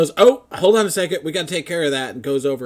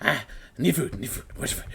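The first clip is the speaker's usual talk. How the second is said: barely audible, whispered mutter; 2 semitones lower, 9 dB quieter than usual. Voicing a hamster running a Ferris wheel: hamster muttering to himself. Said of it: "the hamster's muttering to himself".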